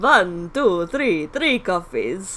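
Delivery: very loud, booming puppet-vampire voice. Joking while counting out three coffees, as a the Count impression. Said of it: "I'm making the Count from Sesame Street".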